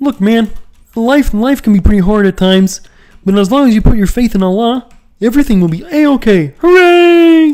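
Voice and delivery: very high and loud puppet-style voice. Asked whether they can do Kermit the Frog, answering in a Kermit the Frog voice. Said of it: "Can you do Kermit the Frog?".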